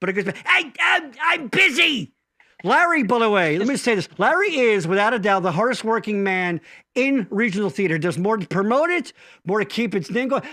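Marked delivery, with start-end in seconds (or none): 0.4-2.1 high, very slow, dragged-out drawl. Doing an impression of Larry that people copy: Larry impression. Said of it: "doing my Larry impression".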